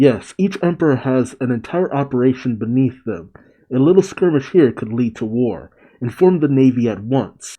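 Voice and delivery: ordinary talk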